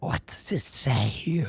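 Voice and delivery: soft, slow, hushed, barely voiced whisper. Voicing a character leaning in behind a reader: whispering in character. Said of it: "kinda, like, whisper".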